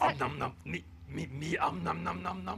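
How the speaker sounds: big, booming, very loud munching monster voice. Answering an interviewer about eating cookies: Cookie Monster voice.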